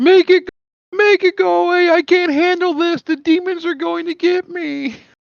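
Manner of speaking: sobbing, bawling, very high-pitched pleading wail. Retelling a friend's panicked first high: imitating someone bawling. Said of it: "he's crying, he's bawling".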